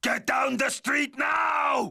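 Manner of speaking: screamed, yelling delivery. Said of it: "What exactly should I scream?".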